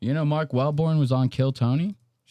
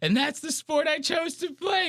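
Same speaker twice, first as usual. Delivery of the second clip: very high, mock on-the-verge-of-crying voice; 14 semitones higher than usual. Retelling a line someone said, imitating someone near tears. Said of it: "about to break down in tears".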